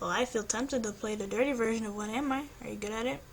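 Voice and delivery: plain reading voice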